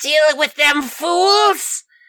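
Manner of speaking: high, slow, squeaky villain voice. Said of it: "did you hear his voice?".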